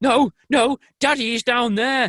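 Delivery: loud high shouting. Telling a story about a kid running off, acting out his mum's line as a shout.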